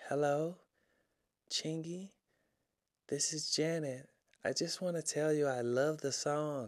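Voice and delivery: very quiet, high, soft little voice. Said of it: "all you heard was this little soft voice".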